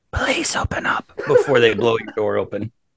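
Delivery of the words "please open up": hushed, breathy whisper. Joking about raiders at the door, imitating a whisper. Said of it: "they might whisper".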